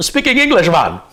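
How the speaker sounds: put-on thick Jamaican accent, pitched very high and loud. Retelling how a driver in Anguilla answered your question, in a really heavy Jamaican accent. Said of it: "he's got that Jamaican accent, but it's like really heavy".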